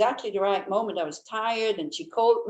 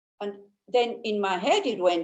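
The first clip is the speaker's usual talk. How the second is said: ordinary talk, nothing marked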